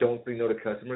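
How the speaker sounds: ordinary talk, nothing marked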